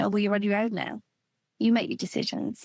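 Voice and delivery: ordinary talk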